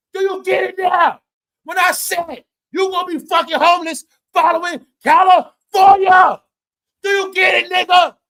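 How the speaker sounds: hollering. Addressing viewers directly, yelling. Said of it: "Sorry to yell".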